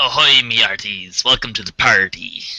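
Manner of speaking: put-on pirate voice. Greeting the others at the start of a podcast, talking like a pirate. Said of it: "be we all talking like pirates today?".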